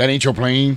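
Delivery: gruff tough-guy voice. Retelling a movie scene as Mister T would say it: Mr. T voice. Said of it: "he brought in Mister T, and he was like".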